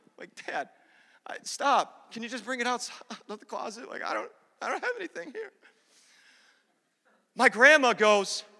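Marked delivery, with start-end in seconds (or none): 0.5-5.5 acted crying, quieter. Retelling pleading with his dad about gifts, the speaker imitates himself crying. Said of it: "Now I'm like crying".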